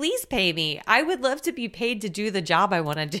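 plain

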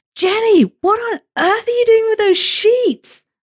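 put-on high-pitched, loud Bronx accent. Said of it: "saying in her Bronx accent".

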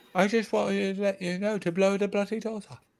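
put-on London accent. In a group trading impressions, the speaker follows with a Michael Caine impression. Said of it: "that's not a bad Michael Caine".

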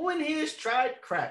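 high, sarcastic, needling, provoking tone. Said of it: "me being the sarcastic asshole that I am".

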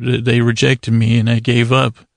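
ordinary talk, nothing marked

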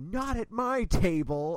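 very loud, long drawn-out freak-out scream. Retelling how a DM freaked out at a player, retelling a scream. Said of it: "freaked out and just started screaming like".

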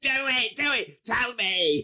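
put-on man's shout. Retelling a scene where a man comes up to someone, retelling a man's shout. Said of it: "he's just shouting in his face".

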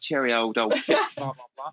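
mocking, put-on fake London accent. Mocking people who moved to London recently: imitating a put-on London accent. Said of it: "moved to London for, like, five minutes".

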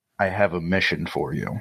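put-on serious whisper. Retelling how a colleague came up and whispered a request: imitating a serious whisper. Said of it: "whispers in my ear, like, super seriously".

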